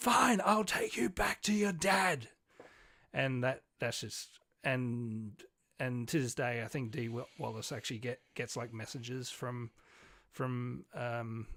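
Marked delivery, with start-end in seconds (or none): 0.0-2.3 put-on high, loud, screamed outburst. Retelling a film scene where the mother answers her son: imitating someone screaming.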